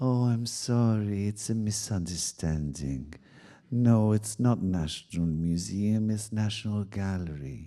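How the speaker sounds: gentle, soft-toned, soft-spoken delivery. Retelling what the lady in charge of communication said, in a soft voice. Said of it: "with this really kind of soft voice".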